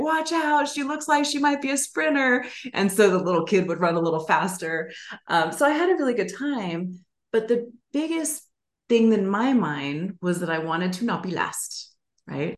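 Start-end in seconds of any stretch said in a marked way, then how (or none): 0.0-2.4 high-pitched shouted yell. Retelling what a kid's dad yelled beside them during a race, retelling a dad's yell. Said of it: "his dad was yelling like".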